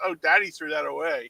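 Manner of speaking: ordinary delivery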